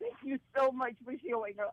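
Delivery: high, emotional, deeply moved tone. Thanking someone for showing up to a vote: very emotional. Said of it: "even now I'm just very emotional".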